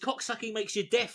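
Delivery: ordinary talk, nothing marked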